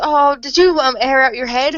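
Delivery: acted, sweetly naive, bright, cheerful, innocent voice. Retelling what a game's girl character says on seeing a horse: mock innocent cheerful voice. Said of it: "ironically innocent".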